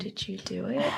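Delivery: very eerie, uncanny, unsettling delivery. Retelling what she asks another speaker: imitating an eerie delivery. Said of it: "just very eerie the way that she says it".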